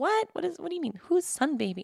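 soft, confused tone. Retelling her reaction when someone asked about Sun Baby, acting out past confusion. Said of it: "I was like so confused".

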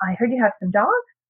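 rising upspeak lift on the word dogs. Showing how uptalk sounds to a listener, rise on dogs like question. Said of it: "it sounds to the person listening as though you're asking a question".

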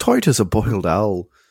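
put-on Irish accent. Reading out a slang phrase for drunk, Irish accent. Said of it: "you have to read that with an Irish accent".

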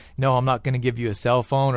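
ordinary talk, nothing marked

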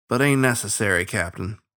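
plain

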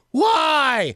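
very high-pitched, long, stretched-out, drawn-out yell. Acting out someone on a stormy night: imitating someone yelling. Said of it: "and you're yelling".

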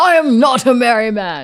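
loud, slow, drawn-out, badly done voice. Talking about Star Trek, the speaker attempts a bad Worf impression. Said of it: "That's not at all what Worf sounds like".

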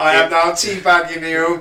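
gloating robot cackle, high-pitched and loud.

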